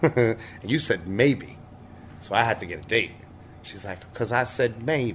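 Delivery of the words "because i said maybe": put-on American southern accent throughout. Retelling what a woman said to the speaker, doing her southern voice. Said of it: "Like with that southern voice".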